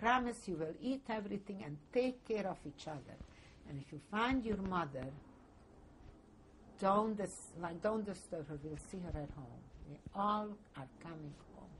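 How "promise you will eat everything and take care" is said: usual speaking voice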